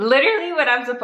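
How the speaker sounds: high, loud voice breaking mid-word. After suddenly feeling lightheaded, speaking with voice cracking. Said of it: "my voice just cracked".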